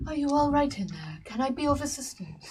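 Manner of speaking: mild, unassertive, low-key, gentle tone. A character outside a tent where whimpers are heard: quiet. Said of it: "Manuvial will say quietly".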